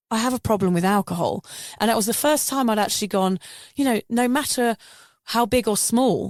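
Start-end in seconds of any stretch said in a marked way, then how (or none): none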